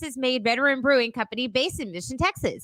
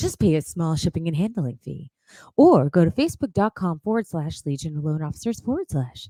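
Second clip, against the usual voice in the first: put-on creepy ad-read voice, lower; 8 semitones lower than usual. Reading a sponsor ad aloud: put-on disturbing ad voice. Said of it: "most disturbing ads, ad voice".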